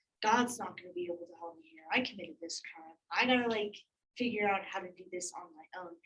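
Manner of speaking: plain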